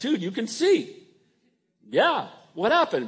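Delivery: high, excited, amazed voice, blurted out.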